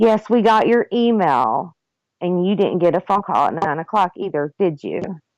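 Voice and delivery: patronizing, superior, very condescending tone. Retelling what a woman said to the speaker: mock-condescending retelling. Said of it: "Very condescendingly".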